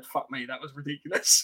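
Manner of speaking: mock mutter, quiet, under the breath. Speaker retells a teammate's reaction as the speaker threw himself over a wall, retelling a muttered aside. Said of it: "I think just under his breath".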